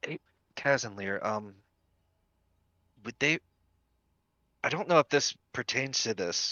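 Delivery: quiet whisper. Pulling Casimir aside so nobody else hears: whispering. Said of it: "just whisper to him".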